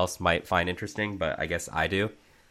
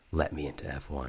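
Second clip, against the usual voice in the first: low, very hushed, menacing half-whisper; 4 semitones lower, 10 dB quieter than usual. Speaker acts out grabbing someone by the shirt collar, menacing Clint Eastwood half-whisper. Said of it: "a menacing whisper".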